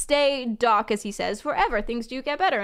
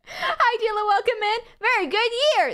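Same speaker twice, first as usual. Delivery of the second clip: put-on bouncy, high, peppy children's show host voice; 9 semitones higher than usual. Imitating how a man talks, like a costumed children's show presenter. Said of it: "talks like a like a presenter of a children's show".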